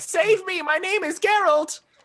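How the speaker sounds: put-on very high, slow, pleading little-kid voice. Faking a kid trapped in a bag to deceive someone: imitating a kid pleading for help. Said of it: "a general idea of what I think the kids might sound like".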